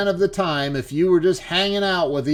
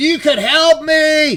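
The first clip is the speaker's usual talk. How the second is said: acted-out heated man's screaming, pitched up; 9 semitones higher, 5 dB louder than usual. Telling a story, speaker acts out a man screaming at a woman, retelling a scream. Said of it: "he is screaming at her".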